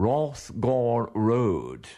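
put-on posh accent with sing-song tune. Retelling how bus conductors called out the stop: imitating a posh accent. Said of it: "used to put on a posh accent and call out".

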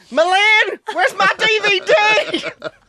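put-on shrill scream in an American accent. Acting out what she screamed going through the bins, retelling a scream in an american accent. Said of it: "Screaming in the American accent".

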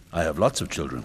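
ordinary delivery

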